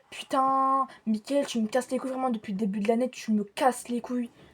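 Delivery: mock angry, heated blow-up, sudden snapping outburst. Retelling standing up to a classmate who threw a pen: imitating own angry outburst. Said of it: "je suis en colère".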